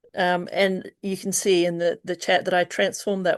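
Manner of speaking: plain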